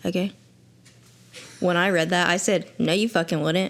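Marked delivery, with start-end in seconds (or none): 2.8-3.7 put-on angry, annoyed tone. Retelling own reaction on reading a book line: retelling an angry retort. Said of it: "honestly pissed that line was in there".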